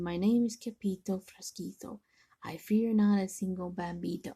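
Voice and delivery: very soft, quiet voice. Narrator reading a story, a sword-fighter introducing himself to his attacker, very soft voice. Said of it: "in a muy, muy soft voice".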